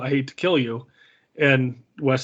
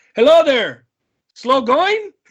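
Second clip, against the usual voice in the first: mock very high, loud, breezy, cheery sing-song; 12 semitones higher, 7 dB louder than usual. Quoting Inigo looking down at a climber on a cliff: cheery Inigo quote. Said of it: "he says it so cheery".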